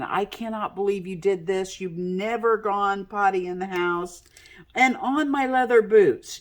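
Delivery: furious angry yell. Retelling yelling at the dog that peed on the speaker's boots, retelling an angry yell. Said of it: "yelling at the dog saying".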